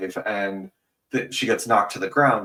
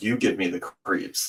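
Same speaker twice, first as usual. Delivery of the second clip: mock flat police-officer voice; 3 dB quieter than usual. Retelling a movie scene where a cop turns to his partner: imitating a deadpan delivery. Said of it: "he just says it in this very deadpan way".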